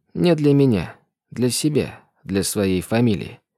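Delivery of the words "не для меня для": plain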